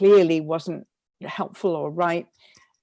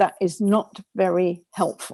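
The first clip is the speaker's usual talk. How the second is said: firm, tough tone, slower. Recounting talking back to their own inner critic, retelling a firm tone. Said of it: "You have to be quite tough with your critic".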